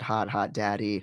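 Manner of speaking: ordinary talk, nothing marked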